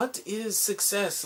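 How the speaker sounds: put-on quiet, poor British accent. Quoting a friend who has an accent, the speaker does a bad Sherlock accent. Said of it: "I'm doing a bad Sherlock accent".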